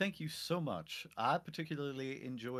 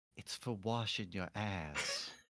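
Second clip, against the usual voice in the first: quiet, hushed, confiding leaned-in aside; 6 semitones lower, 5 dB quieter than usual. Leaning in to tell another character something, speaking real quiet. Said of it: "I'll lean in real quiet".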